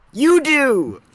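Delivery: very high-pitched, loud yell. Answering another speaker who says who knows: yelling. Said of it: "I'm sorry for yelling again".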